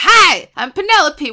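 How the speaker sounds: sassy put-on voice. Describing a TV research character, imitating her: sassy Penelope voice. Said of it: "she's, like, sassy".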